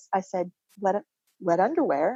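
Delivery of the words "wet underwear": rising, question-like tune on underwear. Repeating grandmother's last words back to her, question rise on 'wet underwear'. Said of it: "you just make it sound like a question".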